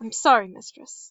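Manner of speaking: plain reading voice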